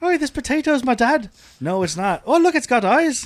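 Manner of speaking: put-on Irish accent. Doing a comic bit in a put-on Irish accent. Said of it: "Mine sounds more insensitive to Irish people".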